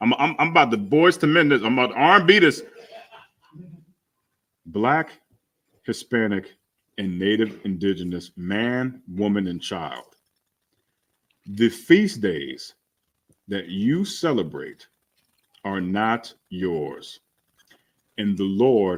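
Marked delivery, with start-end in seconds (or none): 4.7-17.2 calm, low, brought-down, settled delivery. The speaker addresses the audience and brings the delivery down: calm, toned down. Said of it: "Let me say it calm and we bring it down".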